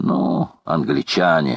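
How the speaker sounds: disdainful, contemptuous, scornful tone. The major answers Paganel's remark, contemptuously. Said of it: "презрительно заметил майор".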